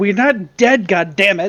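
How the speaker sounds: furious, angry shouted yell. Her character, being chased, yells back: an angry yell. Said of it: "she did yell back angrily".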